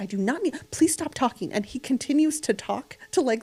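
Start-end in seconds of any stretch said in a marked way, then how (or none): 0.0-1.5 put-on nervous, arguing woman's voice. Retelling an older lady arguing with her husband on a delayed plane: imitating an arguing nervous wife. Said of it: "her and her husband are arguing".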